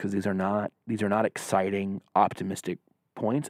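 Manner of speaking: hushed whisper. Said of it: "we're gonna whisper about these things".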